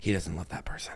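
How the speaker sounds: soft, breathy, hushed, secretive whisper. Retelling what she whispered about a man's new relationship, retelling a whisper. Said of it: "and she just whispers".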